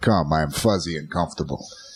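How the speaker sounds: soft put-on Russian accent. A host voices what the voice in their head said, in a Russian accent. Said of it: "a Russian accent in my head going".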